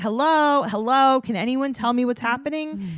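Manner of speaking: put-on high-pitched screaming kid yelling. Retelling how Ryder screamed while the adults talked, imitating Ryder screaming. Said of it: "Ryder's like screaming".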